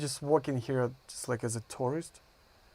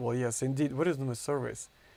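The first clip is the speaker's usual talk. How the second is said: usual speaking voice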